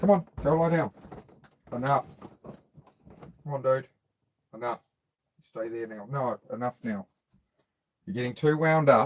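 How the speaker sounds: soft, kind yet firm, settling tone. Telling a whining dog to go lie down: firm but kind. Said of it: "Trying to be firm but kind".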